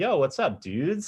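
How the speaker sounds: casual relaxed voice. Speaker showing how they greet their fiance and roommate downstairs, casual hangout voice. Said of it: "it completely changes".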